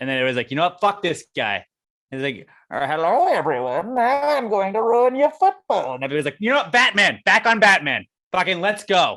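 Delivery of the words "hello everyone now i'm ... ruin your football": silly, funny villain voice, pitched up high. Joking about a villain ruining a Steelers game, doing a Bane impression. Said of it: "a cool bad guy with a funny voice".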